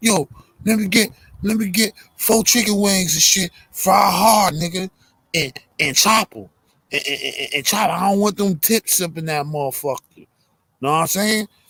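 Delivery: stuttering, stumbling over words, pitch lifted.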